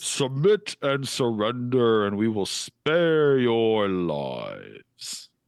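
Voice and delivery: grand, stern, commanding, swooping declamatory delivery. A figure's voice carries across the water to the crew of the Blue Hydra, booming voice. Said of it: "you hear his voice kind of boom across the water".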